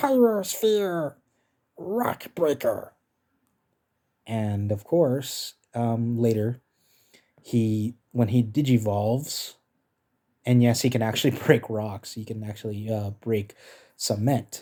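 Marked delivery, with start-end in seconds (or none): 0.0-2.9 very high-pitched cartoon call. Showing off the character voice he can do, Guilmon attack call. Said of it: "I can do his attacks".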